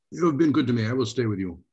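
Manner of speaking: put-on Russian accent throughout. A player answers another character's invitation to join them, in a Russian accent. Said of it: "Your Russian accent is better than my American".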